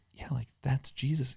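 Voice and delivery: very soft whisper.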